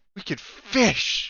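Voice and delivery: put-on, joyful, delighted voice full of simple glee. Retelling another player's line that broke them: imitating Jose's joyful delivery. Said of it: "the joy with which Jose said it".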